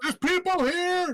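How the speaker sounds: very high, shrill, shrieking goblin cry. Game master voices a goblin with a scimitar who spots the party: goblin yelling. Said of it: "And he yells".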